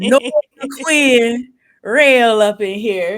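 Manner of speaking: loud, put-on Louisiana accent. A show host introduces a guest in his best Louisiana accent. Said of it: "let me put in my best Louisiana accent".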